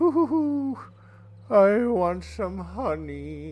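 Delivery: slow, swooping cartoon voice, "honey" drawn out, pitch wandering. Showing how their own voice sounded a moment ago: Winnie the Pooh voice. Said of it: "Sounded like Pooh".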